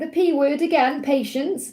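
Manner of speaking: ordinary talk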